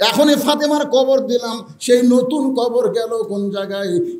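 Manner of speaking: normal talking voice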